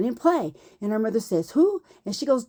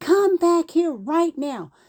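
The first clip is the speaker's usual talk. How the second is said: mock yelling, higher pitch; 6 semitones higher than usual. Retelling how a woman shouted after the speaker: imitating a neighbor yelling. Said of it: "She's yelling at me".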